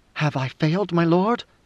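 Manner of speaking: plain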